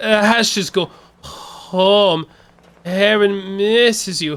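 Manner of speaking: weird, very slow, high-pitched, drawn-out delivery. Repeating a game character's line the way he just said it: imitating a weird line delivery. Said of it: "the weirdest way that you could have possibly said that".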